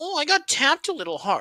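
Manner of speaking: play-acted, whiny, swooping whining moan. Mocking players who fake injuries for calls: mocking a whining player. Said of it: "you're gonna sit here and go".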